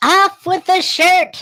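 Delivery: shrill, very high, very loud woman's voice. Reading the line the way Kahuna does, imitating Kahuna's voice. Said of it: "I got to do it in her voice".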